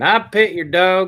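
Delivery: Kentucky southern accent. Asked to say a line in a southern accent, say it in a southern accent. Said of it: "you have to say it in a southern accent".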